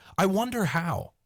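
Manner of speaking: put-on high, childlike voice full of wondering curiosity. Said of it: "he literally said it like, it was, like, childlike curiosity".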